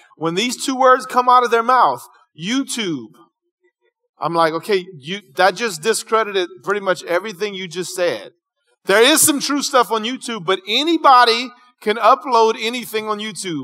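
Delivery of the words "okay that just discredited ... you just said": normal talking voice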